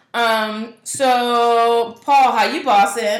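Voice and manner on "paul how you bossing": loud voice, higher and louder. Asking the other speaker how they are doing: speaking loudly. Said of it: "I don't know why I'm so loud".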